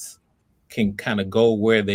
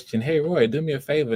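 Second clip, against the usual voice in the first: rising question lilt ending on favor; 5 semitones higher than usual. Coaching an actor named roy, showing the wrong reading: rising like a question. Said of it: "it can't come off like a question".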